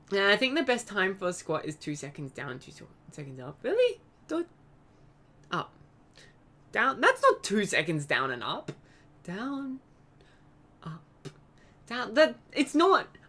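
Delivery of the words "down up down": soft, hushed, calm whispered meditation voice. Counting out a slow squat rhythm: calm meditating voice. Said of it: "I also kinda sound like I'm meditating".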